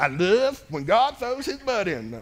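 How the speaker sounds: put-on country hillbilly accent. Quoting a saying of the speaker's dad, in a hillbilly accent. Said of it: "My dad's like hillbilly".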